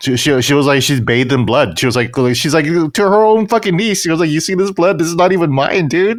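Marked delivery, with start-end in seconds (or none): 4.3-6.2 high, proud, gloating, pleased-with-herself tone. Retelling what a character said to her own niece, mock-proud Atsu boast. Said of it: "she was almost proud of it".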